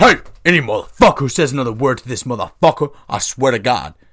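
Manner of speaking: put-on deep, dropped, puffed-up big boy daddy voice. Retelling how a man warned everybody to stop: imitating a daddy voice. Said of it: "That was like a daddy voice".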